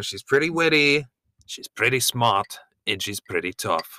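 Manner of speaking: bad put-on Australian accent drifting into British. Retelling what a man says about his wife, in a terrible not-even-Australian accent. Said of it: "a really terrible, not even Australian".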